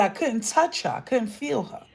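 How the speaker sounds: normal talking voice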